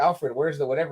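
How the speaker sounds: ordinary talk, nothing marked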